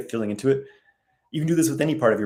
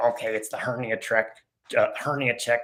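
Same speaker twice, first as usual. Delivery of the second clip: slow, creepy, froggy croak. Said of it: "like, creepiest voice".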